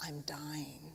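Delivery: soft, hushed voice. Retelling what sick children would say when asked about their illness, quietly.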